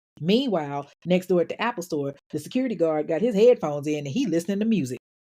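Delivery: ordinary delivery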